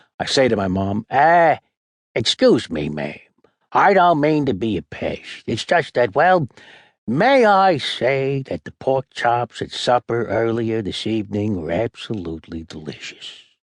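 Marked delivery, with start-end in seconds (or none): 1.1-13.4 polite, fumbling, bumbling detective voice. Speaking to mom, holding a pencil like a cigar, Columbo impression. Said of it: "She howls at my impression".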